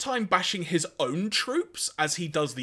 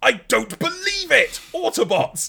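loud, high-pitched blurted exclamation; 7 semitones higher, 7 dB louder than usual. Retelling a cartoon scene where Cyclonus speaks, Victor Meldrew impression. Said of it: "doing his best Victor Melger impression".

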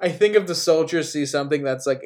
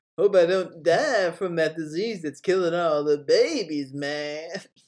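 put-on baby voice; 3 semitones higher, 4 dB quieter than usual. Joking about a film, doing an impression of Clive Owen's son Bob Dylan. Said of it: "That's my impression of Clive Owen's son, Bob Dylan".

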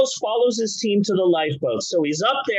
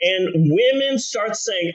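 ordinary delivery

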